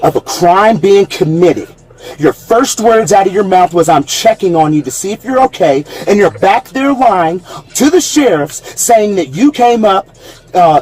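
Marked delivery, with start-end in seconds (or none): none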